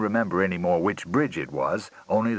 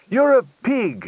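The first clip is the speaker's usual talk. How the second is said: sharp, shrill outburst yelled very high; 6 dB louder than usual. A woman yells at Fillmore, who wants another drink: yelling. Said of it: "she yelled".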